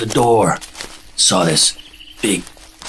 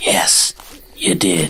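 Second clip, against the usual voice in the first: voiced, whispery stage whisper; 3 semitones lower than usual. In a joke, he answers her in a whispery voice. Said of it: "in a whispery voice".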